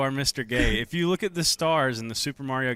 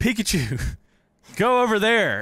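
put-on bossy, loud, high, childish kid voice; 7 semitones higher, 6 dB louder than usual. Retelling how he gave Pikachu orders as a kid, imitating himself as a kid. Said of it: "I'd be like".

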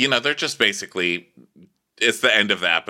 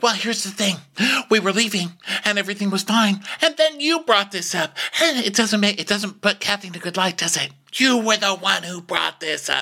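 mocking high-pitched voice. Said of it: "So Rinna's like".

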